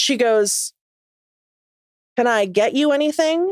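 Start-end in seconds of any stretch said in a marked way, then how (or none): 2.2-3.5 curt, pointed delivery. Retelling what a cafe worker asked the group: imitating a snippy tone. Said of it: "in a tone".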